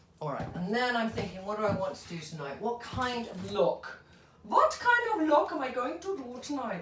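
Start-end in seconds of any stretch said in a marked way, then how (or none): 4.5-6.8 random fake German accent, very high pitch. Wondering aloud what to do next, in a put-on German accent. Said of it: "I suddenly put on a German accent".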